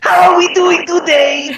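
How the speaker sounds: put-on animatronic voice. Greeting the other speaker in a Funtime Freddy voice. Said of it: "Hi, Funtime Freddy!".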